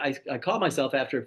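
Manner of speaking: ordinary delivery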